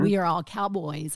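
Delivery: ordinary delivery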